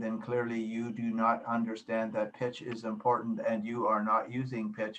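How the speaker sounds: toneless voice. An instructor explaining pitch demonstrates boring speech; flat monotone voice. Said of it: "If you talk like this the whole time".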